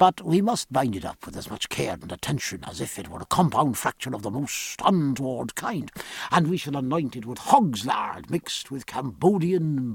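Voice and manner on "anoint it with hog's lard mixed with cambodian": ordinary delivery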